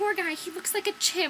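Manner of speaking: pitying tone, high and loud.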